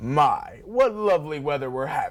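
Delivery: hammy villain voice with sing-song pitch swoops. A host introduces the next segment for Halloween in a Big Bad Wolf villain voice. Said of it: "using one of his favorite villain voices".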